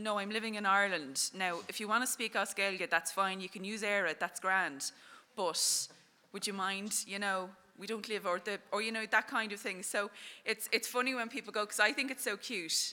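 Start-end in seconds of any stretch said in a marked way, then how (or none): none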